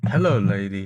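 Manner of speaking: put-on seductive tone. Teasing the other speaker by imitating his seduction line: mock seductive voice. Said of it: "is that what you do to try and seduce people".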